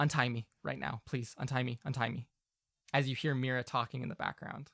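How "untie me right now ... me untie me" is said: character whisper, much quieter. The game master speaks as Ferdinand to a player, Ferdinand whispering very quietly. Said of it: "Ferdinand will whisper to you very quietly".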